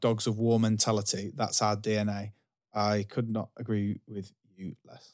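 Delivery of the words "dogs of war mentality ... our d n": ordinary delivery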